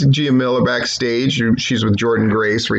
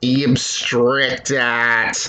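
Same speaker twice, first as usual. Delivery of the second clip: Australian accent with Aussie vowels. Speaker imitates how Australians say a favorite phrase, in an Australian accent. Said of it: "my favorite thing that Australians say".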